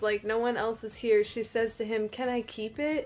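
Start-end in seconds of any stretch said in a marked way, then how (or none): 2.1-3.1 gentle, hushed, soft and quiet voice. Retelling a scene, she asks Peter as if no one else were there; imitating a soft voice. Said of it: "in a soft voice".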